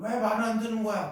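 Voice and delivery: high, loud angry yell.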